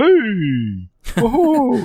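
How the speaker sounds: silly, goofy voice, very high and swooping. Imitating the player avatar's voice from Mario Kart: goofy game avatar voice. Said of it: "this goofy voice that was like".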